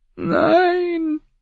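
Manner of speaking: very high, drawn-out nervous squeak. Samuel Tarly objects as the men talk about the dead, a nervous squeak. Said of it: "quiekte Samuel Tarly".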